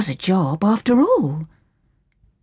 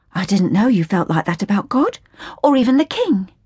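usual speaking voice

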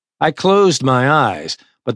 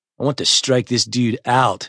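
usual speaking voice

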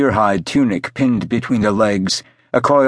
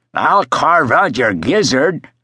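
put-on half-drunk, raspy, rasping voice, higher; 3 semitones higher than usual. A sailor with a drawn dirk faces Tiger Eye: raspy, half-drunk. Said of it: "he rasped, half-drunk".

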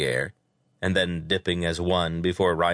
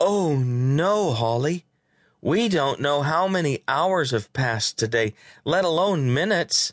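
feigned horror, very high, "no" drawn out; 9 semitones higher than usual. Narrator reads Landon answering Holly, mock horror. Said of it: "Landon gasped in mock horror".

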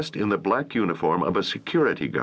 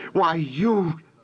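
very high-pitched, startled, caught-off-guard outcry; 9 semitones higher than usual. A woman finds the man she was spying on right behind her: exclaiming. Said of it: "Holly exclaimed".

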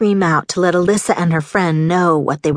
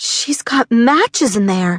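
with a gasp; 4 semitones higher than usual. Bree, hearing the girls inside, reaches for the doorknob, gasping. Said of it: "Bree gasped".

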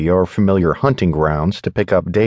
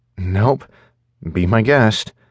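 mumbled, half-swallowed, mouth barely opening; 3 semitones higher than usual. Alone with a beer, the narrator answers a stranger asking about the seat: mumbled. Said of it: "I mumble".

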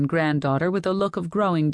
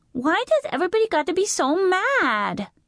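little, tiny voice. Narrator reads the granddaughter's question during a family fight, in a small voice. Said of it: "Dory's small voice asked".

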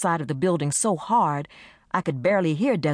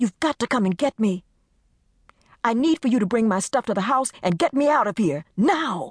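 high, hard, insistent voice, no longer pleading; 7 semitones higher than usual. Desiree, switching from pleading, tells the narrator to come get her; demanding. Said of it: "Desiree's voice changed from pleading to demanding".

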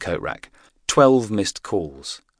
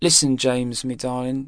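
put-on slurred speech, higher pitch; 7 semitones higher than usual. Gwen, after a few too many drinks, answers her son James: slurring her words. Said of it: "slurring her words".

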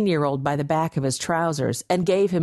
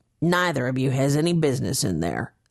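low, rough, gruff growl; 3 semitones lower than usual. Reading a story aloud: a man answers two pleading youths, growled. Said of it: "the man growled".

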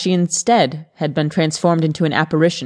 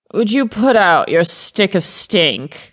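put-upon, grumbling, complaining tone; 4 semitones higher than usual. Bothered by someone's cigarette smoke, complaining. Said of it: "Gareth complained".

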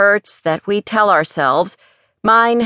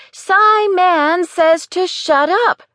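put-on shrill, very high, drawn-out little-girl shout; 11 semitones higher than usual. Retelling walking the temple aisles as a little girl: imitating a little girl shouting. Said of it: "shouting at the top of my little girl voice".

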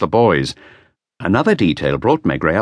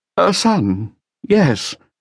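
grudging, reluctant tone, very high-pitched; 10 semitones higher than usual. Madame Gallet, asked whether she has a son, answers: reluctant. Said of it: "She said reluctantly".

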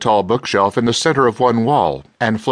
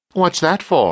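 insistent, demanding, pitched up; 5 semitones higher than usual. A narrator reads a character questioning a man holding a gun: demanding. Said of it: "Dewhurst demanded".

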